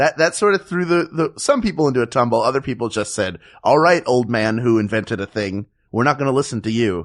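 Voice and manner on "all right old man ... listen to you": ordinary delivery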